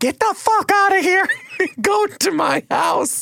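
very high-pitched, frantic screaming with swooping pitch. Retelling a friend yelling from behind the counter, imitating someone screaming. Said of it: "immediately started screaming from behind the counter".

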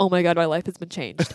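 ordinary talk

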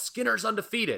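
play-acted, very high-pitched wrestling-style holler. Retelling a wrestler's line during a finishing hold: imitating a wrestler yelling. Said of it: "puts the sharpshooter on Bobby Heenan and yells".

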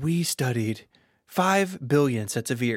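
put-on English accent. Recalling Apple's EarPods video, the speaker quotes its designer: Jony Ive English accent. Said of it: "Is that your English accent?".

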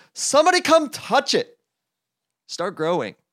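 loud, very high, sing-song, swooping hollering. Reading a story aloud, a toad shouting at his garden: loud shout. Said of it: "he said loudly".

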